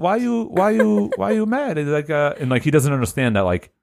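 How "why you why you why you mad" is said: very high, slow, innocent-sounding delivery. Imitating Colossus's broken-English answer about his work: imitating Colossus. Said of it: "he's like".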